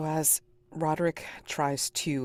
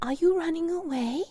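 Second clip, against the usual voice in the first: put-on very high voice, childlike yet not human. An unseen voice nearby asks a question: childlike inhuman voice. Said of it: "kind of like a kind of childlike, but yet also something not human".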